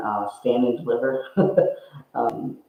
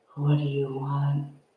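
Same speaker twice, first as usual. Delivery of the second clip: very gentle, very, very soft voice; 3 semitones higher, 3 dB quieter than usual. Speaker retelling what they said to the others after speaking up: very soft voice. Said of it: "I said in a very, very soft voice".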